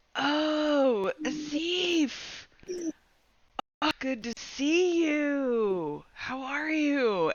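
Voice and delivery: odd, high-pitched, very slow goblin voice. Narrator voices a goblin greeting someone, goblin voice. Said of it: "it's still a goblin's voice".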